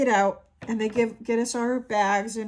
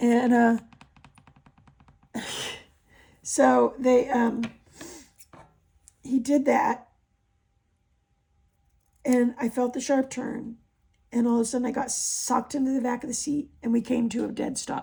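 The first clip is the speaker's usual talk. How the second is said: voice giving out. Telling a Navy story near the end of a long video, voice going out. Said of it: "my voice is going out".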